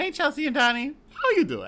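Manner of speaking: very high, sing-song, swinging TV host voice. Opening a listener question to Chelsea and Donnie: Wendy Williams impression. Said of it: "doing our Wendy Williams impression".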